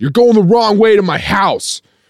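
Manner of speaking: mock furious shout, very high pitched. Retelling what a man in the backseat yelled at the speaker, retelling a yell. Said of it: "he yells".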